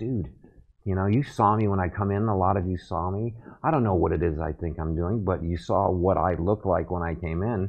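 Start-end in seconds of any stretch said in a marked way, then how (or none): none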